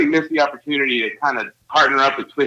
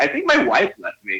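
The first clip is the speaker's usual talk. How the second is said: casual, offhand, nonchalant, matter-of-fact. Retelling what a hammered man said on coming in: imitating a nonchalant, matter-of-fact voice. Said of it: "nonchalant, matter-of-fact voice".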